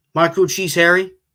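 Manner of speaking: words run closer together. Told to repeat the phrase closer together, saying it with the words run together. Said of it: "Say it a little, little closer together".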